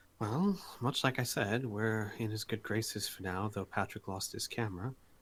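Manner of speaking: soft, quiet, low-key words said back. A character quietly answers a companion's question: quiet voice. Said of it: "quietly say back".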